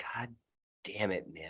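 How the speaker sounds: very quiet, muttered half-whisper under the breath. Voicing a character who inspects a heart, half-whispering under breath. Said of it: "under their breath, you hear them whisper".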